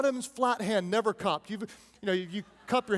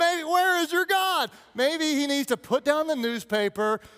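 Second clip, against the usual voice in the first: mocking, needling, taunting jeer, pitched up; 5 semitones higher, 4 dB louder than usual. Acting out Elijah taunting the others about their god: imitating Elijah taunting. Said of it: "he's taunting them".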